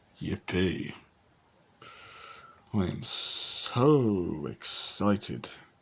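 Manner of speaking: heavy sarcasm, very slow, drawn-out, mock cheerful. Answering news that many girls will come after them: sarcastic. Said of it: "I'd say that's sarcasm".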